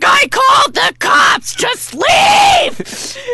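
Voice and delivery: put-on scream. Retelling standing on the pool wall: retelling a scream. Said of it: "screaming at everybody".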